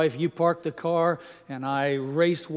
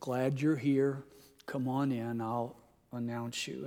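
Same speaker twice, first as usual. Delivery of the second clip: quietly spoken, kept down, soft low murmur; 4 semitones lower, 8 dB quieter than usual. Retelling what the soundboard man said when leading the speaker in, said quietly. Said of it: "quietly said".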